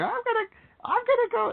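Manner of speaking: put-on voice going way up, high and squeaky. Retelling what someone said in a video: Elmo voice. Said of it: "in the, the Elmo voice".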